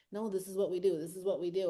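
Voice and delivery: put-on little devil voice. Acting out the little devil on your shoulder: voicing the little devil. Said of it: "the little devil on your shoulder that's like".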